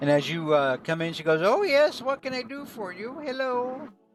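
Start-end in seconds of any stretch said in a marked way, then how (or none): 1.4-3.9 put-on high-pitched elderly woman voice. Narrating a scene, voicing an elderly woman greeting you as you come in: elderly woman voice. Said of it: "It is an older woman".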